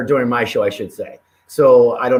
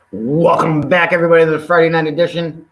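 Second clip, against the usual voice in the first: buzzing, excited, hyped-up, pitched-up delivery; 5 semitones higher, 3 dB louder than usual. A host welcomes everyone back to the Friday night edition; hyped up. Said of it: "If you hear it in my voice, yeah, I'm hyped".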